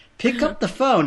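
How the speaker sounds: put-on British accent, pitched very high. Retelling a movie scene, a mother's answering-machine message: imitating a british accent. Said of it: "she had a British accent".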